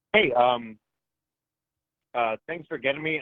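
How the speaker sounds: mid-swallow, mouth full, swallowing while speaking. A call-in caller greets the host while still swallowing, talking while swallowing. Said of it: "I just finished Doritos, so I'm swallowing".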